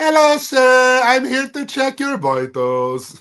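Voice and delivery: put-on very high, swooping, sing-song lilting accent. Describing someone's accent and quoting her, imitating a high-then-low accent. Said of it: "they go like high and then they have this like low thing".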